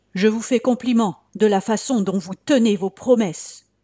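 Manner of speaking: shouted in a big, heavy voice. A guest cries out at the host who received them badly, shouting in a big voice. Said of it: "cria Melchior de sa grosse voix".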